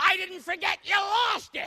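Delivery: very high, very loud, shrill, furious shout. Recalling a nun who came at you when you were seven: retelling her yell. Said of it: "she's yelling".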